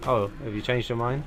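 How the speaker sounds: ordinary talk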